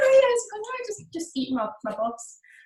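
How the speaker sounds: put-on breezy, very high, swooping, nonchalant voice. Retelling a film scene where a woman is eating someone: imitating a nonchalant tone. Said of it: "nonchalant and so normal".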